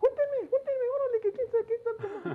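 put-on very high, loud, squeaky childish whine.

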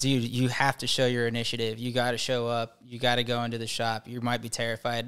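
ordinary talk

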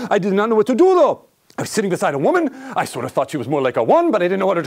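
put-on French accent. Speaker retells what a gentleman said, in a French accent. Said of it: "with a French accent".

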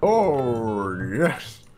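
loud exclamation, oh stretched long and drawn out. A British speaker makes an attempt at a Kool-Aid Man impression. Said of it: "It was an attempt at the Kool-Aid guy".

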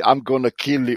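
put-on German accent. Retelling a label caller's threatening phone call: imitating a German accent. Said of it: "with a German accent".

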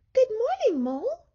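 squeaky little mouse voice, very high. Mouse answers Mole, who hopes she likes surprises, squeaking. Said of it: "squeaked Mouse".

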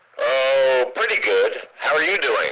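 put-on ventriloquist dummy puppet voice. Doing a ventriloquism act, the dummy answering the performer: ventriloquist dummy voice. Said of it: "let's do a little ventriloquism for you".

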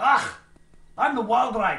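put-on Scottish accent. Speaking as the Wildride and introducing itself, in an affected Scottish accent. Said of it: "I'm affecting a Scottish accent".

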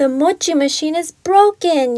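loud, yelled voice. Reading a story aloud, Grandma answers Kimmy as she rushes in, yelling. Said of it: "yelled Grandma".

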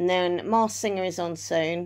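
normal talking voice

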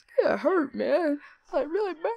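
fake pained voice, pitched very high. Retelling a story, the speaker acts out pretending to be badly hurt. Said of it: "acting like I was actually hurt really bad".

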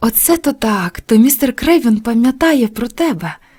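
called out, exclaiming. Martha, hearing that Mary gets a shilling from Mr. Craven, exclaims. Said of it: "вигукнула Марта".

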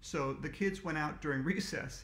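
ordinary delivery

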